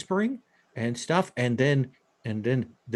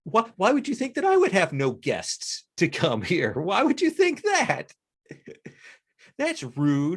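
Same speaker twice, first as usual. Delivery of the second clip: playfully offended, high, swooping mock indignation; 7 semitones higher than usual. Describing a scene, voicing what a woman seems to say to a man: mock offense. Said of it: "clearly draws mock offense from her".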